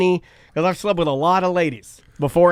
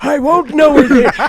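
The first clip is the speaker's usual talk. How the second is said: loud, high-pitched, put-on old man voice; 9 semitones higher, 8 dB louder than usual. Imitating what another speaker just said: imitating a friend's old man voice. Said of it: "You sound like a fucking old man".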